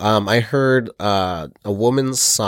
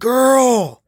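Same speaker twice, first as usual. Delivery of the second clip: high, loud, furious shout. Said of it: "furious voice going".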